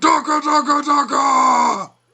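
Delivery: put-on orc voice. Trying out an orc voice after being told they sound like one: Warhammer 40K orc voice. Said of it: "the Warhammer forty K orcs".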